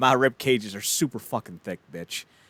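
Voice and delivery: ordinary talk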